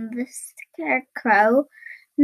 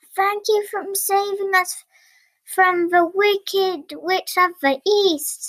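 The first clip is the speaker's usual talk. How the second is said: glad, high exclamation; 6 semitones higher than usual. Narrator reads the crowd's line to Dorothy, crying out happily. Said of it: "cried the crowd happily".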